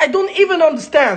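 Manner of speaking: baffled, bewildered outburst.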